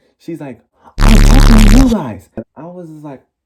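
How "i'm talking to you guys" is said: full-on, very loud, high shrieking screech. Retelling how a woman yelled at the group, imitating a screeching yell. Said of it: "She literally full on screeches at us".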